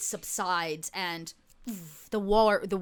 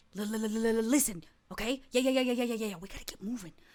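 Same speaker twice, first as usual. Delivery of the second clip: put-on ferret voice; 2 semitones higher, 4 dB quieter than usual. A narrator voices the ferret friend stepping forward, Stutter the ferret voice. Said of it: "your ferret friend uh, Stutter steps forward. He goes".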